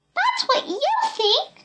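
piercing high-pitched cry. Reading a story aloud, Peepy answers Buck with a shrill cry. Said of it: "cried Peepy in a shrill voice".

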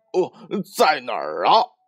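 eager, impatient, can't-wait tone. A character hearing news of his senior brother asks an eager, impatient question. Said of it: "八戒迫不及待地问道".

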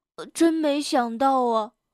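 ordinary delivery

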